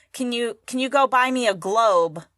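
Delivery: ordinary talk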